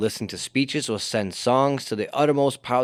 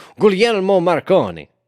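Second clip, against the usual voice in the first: loud, high Italian accent, word rolled out; 7 semitones higher, 8 dB louder than usual. Trying to say a hard italian name: italian accent. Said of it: "when you say it with the Italian accent".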